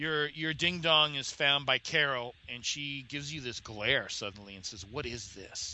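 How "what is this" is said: put-on soft, hushed half-whisper. Voicing a character who glares and grabs a player's shoulder: Carol half-whispering. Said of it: "she whispers to you".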